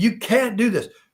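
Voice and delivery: high-pitched screaming. Retelling what a candidate's opponents shout at him: imitating people screaming. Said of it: "people are just screaming".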